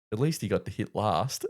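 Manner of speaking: very soft, hushed, barely audible half-whisper. Retelling what a playing partner half-whispered while walking up: imitating a half-whisper. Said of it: "Brody just whispers to me".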